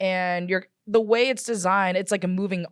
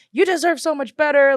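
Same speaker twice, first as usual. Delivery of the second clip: yelling, higher in pitch and louder; 8 semitones higher, 7 dB louder than usual. Retelling yelling at a woman while on a ride, retelling a yell. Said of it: "I'm like yelling at her".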